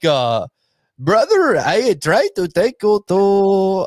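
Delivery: failed put-on Mexican accent. Retelling a man's words to him, in a bad fake mexican accent. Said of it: "That's not Mexican".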